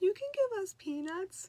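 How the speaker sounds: sweet little voice, very high and slow. Retelling a voice heard again while in the bathtub: imitating a high-pitched sweet voice. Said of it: "a little high pitched, so sweet".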